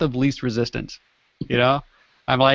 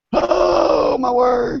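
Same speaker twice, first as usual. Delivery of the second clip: put-on rough, creaky, very high-pitched old-man voice. Repeating the line when asked again: imitating an old man. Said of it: "Sound like an old man".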